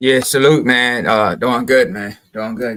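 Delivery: slightly deep, easygoing voice. A guest answering the host's greeting at the start of a show, little deep voice. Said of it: "little deep voice".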